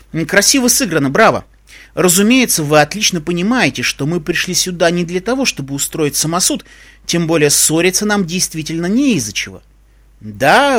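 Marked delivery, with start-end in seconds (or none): none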